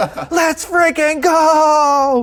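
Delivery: acted screaming. Retelling cheering at a tying goal in the weather office: retelling own screaming. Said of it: "I start screaming in the weather office".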